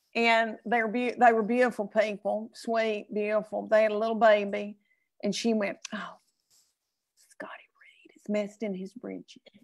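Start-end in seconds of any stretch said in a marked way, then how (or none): 6.0-9.4 hushed, breathy whisper under the breath. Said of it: "And she whispers to me".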